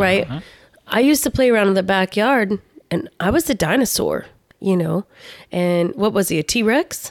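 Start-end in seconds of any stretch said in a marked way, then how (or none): none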